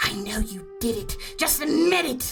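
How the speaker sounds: rough, hoarse voice. Narrator describing overheard arguing, voicing the other speaker accusing Herneva, raspy other voice. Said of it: "this other kind of like raspberry voice".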